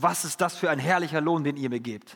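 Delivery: normal talking voice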